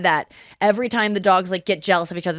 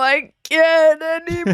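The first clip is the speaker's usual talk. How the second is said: wilting, pitched-up, giving-up voice; 8 semitones higher than usual. Asked to repeat it, doing a dying plant's voice: plant voice. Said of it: "do your plant voice again?".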